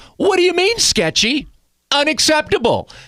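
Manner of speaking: very high, swooping, sing-song, silly put-on voice. Doing a version of a guest's voice for the guest: J Rye voice. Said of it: "this voice I would do".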